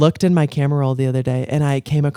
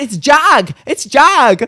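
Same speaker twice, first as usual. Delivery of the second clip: put-on very high, very slow, drawn-out Michigan accent; 12 semitones higher, 5 dB louder than usual. Repeating how the other person said 'jog', imitating a Michigan accent. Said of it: "my Michigan accent".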